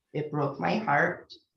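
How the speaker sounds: ordinary delivery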